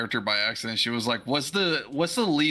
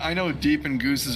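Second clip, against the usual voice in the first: ordinary talk, nothing marked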